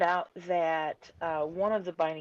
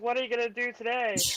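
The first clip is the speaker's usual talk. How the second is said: put-on manic kids' show host voice, higher; 5 semitones higher than usual. Doing an impression when asked, after describing Pee Wee Herman: Pee Wee Herman voice. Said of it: "did Pee Wee Herman".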